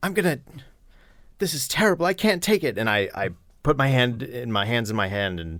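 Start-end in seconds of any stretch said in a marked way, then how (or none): 0.0-2.8 put-on very high, wailing bawling. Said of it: "scurry out bawling".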